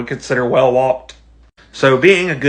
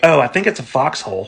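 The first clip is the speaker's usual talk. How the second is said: put-on offhand, unbothered, breezy nonchalant tone. Retelling the wife's reaction to the hole: imitating nonchalant wife. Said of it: "she's all nonchalant".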